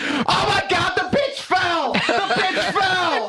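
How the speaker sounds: mock yell, high, shouted, gawking.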